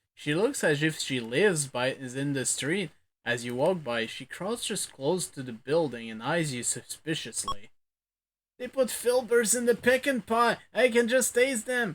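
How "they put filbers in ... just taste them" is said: cackling, very high-pitched voice. Narrator voicing a woman in an alley who eyes the listener, cackling in a high voice. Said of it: "cackling in a high voice".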